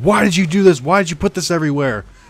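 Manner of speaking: loud, high, furious screaming at top of lungs. Retelling how they yelled at the kid Cody; retelling screaming at top of lungs. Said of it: "Screaming at the top of their lungs".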